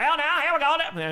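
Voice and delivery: put-on very high-pitched old-school radio announcer voice. Responding to a compliment on his game calling; old radio announcer voice. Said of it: "I could put on an old announcer's voice".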